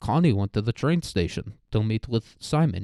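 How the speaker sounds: imitated Swedish accent. Retelling how a random villager chimed in with an explanation, in a put-on Swedish accent. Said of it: "he's got like a Swedish accent".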